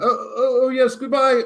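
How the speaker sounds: very high-pitched voice, bewildered and confused. Retelling a goodbye heard from the bathroom: imitating John Cleese's confused voice. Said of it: "this kind of confused voice from the loo".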